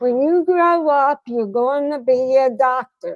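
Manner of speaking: put-on New York accent. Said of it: "I'm not making fun of a New York accent".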